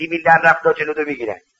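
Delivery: ordinary delivery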